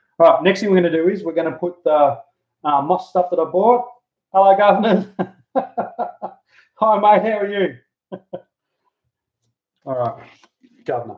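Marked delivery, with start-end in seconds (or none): 4.3-11.2 put-on English accent, pitched higher. Working with moss, the speaker slips into a put-on English accent. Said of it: "I've even got a Pommy accent".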